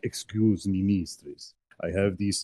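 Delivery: obsequious, fawning long-serving servant voice. Suggesting how another player could ingratiate themselves to her: long-serving valet attendant voice. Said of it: "in the fashion of a valet attendant of long years".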